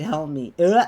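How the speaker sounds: voice breaking and cracking mid-line. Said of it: "that voice crack".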